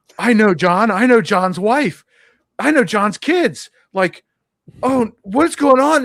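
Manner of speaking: panicked voice. Retelling the instructor's reaction to the news: imitating someone panicking. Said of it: "And she's panicking".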